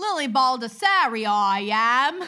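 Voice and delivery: put-on Cockney accent, loud. Reading the podcast's social media plugs, the host uses a Cockney accent. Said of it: "I'm going to do a Cockney accent".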